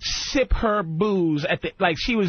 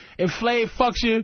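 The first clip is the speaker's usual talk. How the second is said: plain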